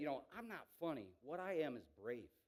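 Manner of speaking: ordinary delivery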